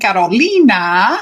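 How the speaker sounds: Carolina pronounced the Spanish way. Speaker says her client's name the way she always does, in a Spanish speaking accent. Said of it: "I always say it in my Spanish speaking accent".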